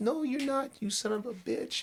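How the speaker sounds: shrill, furious, pissed-off voice pitched way up, acted. Retelling how the lady answered the guy: imitating someone pissed off. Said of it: "she's getting all pissed off".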